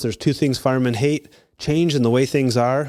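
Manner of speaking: usual speaking voice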